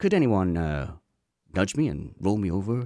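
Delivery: mock placid, very calm, unbothered, no panic at all. Retelling how Matt asked for help when his car flipped: imitating Matt speaking very calmly. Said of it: "you just very calmly said".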